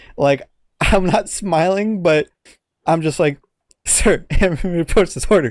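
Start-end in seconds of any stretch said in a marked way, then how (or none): 3.9-5.5 mock laughing mid-sentence while talking. Retelling giving a report: imitating laughing mid-sentence. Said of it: "I'm laughing through as I'm saying this".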